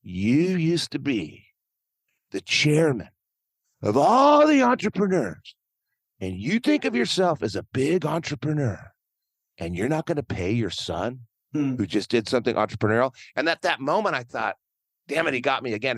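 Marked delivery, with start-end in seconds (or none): 0.1-13.1 animated, swooping voice in full flow. Retell what the son said to his father about not paying him, imitating his son's voice. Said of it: "I got to do his voice".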